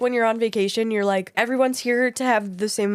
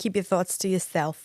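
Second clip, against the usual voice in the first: believable put-on Boston accent, raspy; 4 dB quieter than usual. Speaker addressing listeners, in a Boston accent. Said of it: "you have a really good Boston accent".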